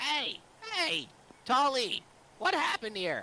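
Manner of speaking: very high-pitched, called-out voice. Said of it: "That's just Crow's voice".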